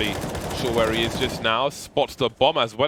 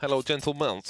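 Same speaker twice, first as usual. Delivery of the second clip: put-on, vague Eastern European accent; 4 semitones higher, 3 dB quieter than usual. Announcing a check on the predictions, greeting the gentlemen in a Borat-style accent. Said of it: "I don't know what accent that is".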